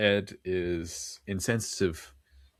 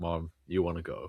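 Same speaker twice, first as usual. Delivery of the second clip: imitated stifled laugh under breath, much quieter; 3 semitones lower, 4 dB quieter than usual. Describing two actors in the next scene, retelling words laughed under breath. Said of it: "They're like laughing under their breath".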